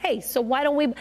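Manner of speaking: put-on casual voice with a Brooklyn accent. Retelling what they asked a cousin; brooklyn accent. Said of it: "in my Brooklyn voice".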